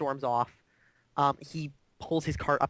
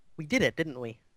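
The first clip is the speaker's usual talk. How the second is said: said through a smile. Game master voices a woman smiling at a player once shelter is assured: smiling while speaking. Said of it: "she smiles at you and says".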